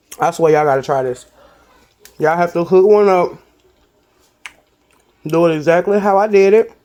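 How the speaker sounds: speaking with a full mouth. Speaker addresses y'all mid-bite, talking with food in mouth. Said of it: "I'm sorry I'm talking with food in my mouth".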